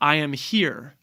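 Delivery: stress on here with rising pitch. Showing how speaking with emphasis sounds: stress on here, pitch rising. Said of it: "when you speak with emphasis, ... the here".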